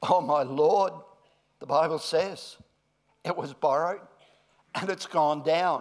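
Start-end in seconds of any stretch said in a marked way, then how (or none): 0.0-0.9 mock cry full of anguish. A speaker with slides voices the young prophet, acting out an anguished cry. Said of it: "You can hear the anguish in the young prophet's voice".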